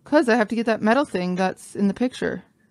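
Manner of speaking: normal talking voice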